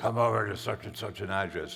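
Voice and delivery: gruff put-on voice.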